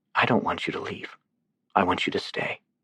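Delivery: soft, husky voice. Narrating a woman answering a man who offered to leave: soft, husky voice. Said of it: "she said in a soft, husky voice".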